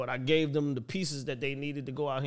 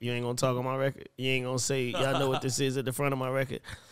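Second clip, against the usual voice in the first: ordinary talk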